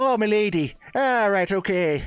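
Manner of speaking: put-on Irish accent, very high and drawn out. Voicing the same character after being told to switch: put-on Irish accent. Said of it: "how you have to put on an Irish accent".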